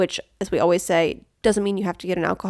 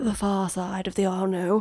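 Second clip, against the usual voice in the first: slipping into a put-on British accent; 4 dB quieter than usual. One co-host answering the other about which side to cover, in a British accent. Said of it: "British there".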